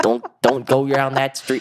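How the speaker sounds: attempted New York accent. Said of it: "I'm trying to get a New York accent".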